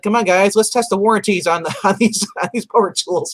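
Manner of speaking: acted, wisecracking, sarcastic, wry tone. Retelling a cartoon scene at a store, imitating Peter Venkman's sarcasm. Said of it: "he's sarcastic in this".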